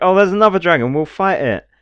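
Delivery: put-on show-off bravado. Retelling a game trailer's lines: imitating a really cocky dude. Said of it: "really cocky dude".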